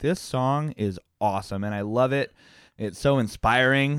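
ordinary talk

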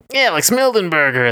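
high-pitched video game hero voice. Introducing yourself as podcast co-host: Sonic voice. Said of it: "That's my Sonic voice".

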